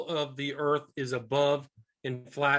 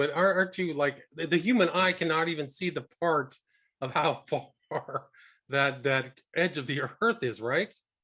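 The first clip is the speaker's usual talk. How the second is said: words broken up by laughter, laughing through them. Questioning another speaker's claim, laughing while talking. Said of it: "Sorry for laughing".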